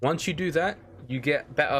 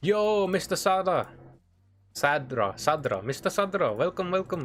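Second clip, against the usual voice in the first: put-on Indian accent, higher and slower; 3 semitones higher than usual. Streamer welcoming a viewer who arrives in chat, in an Indian accent. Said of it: "my accent changed to Indian there".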